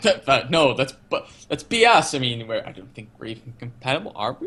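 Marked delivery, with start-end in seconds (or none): 0.0-2.1 put-on defensive delivery, tripping over words. Retelling a scene where Crichton is accused of being affected: imitating Crichton defensively. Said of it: "Crichton gets very defensive".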